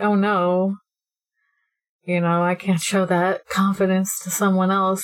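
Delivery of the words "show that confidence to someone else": ordinary talk, nothing marked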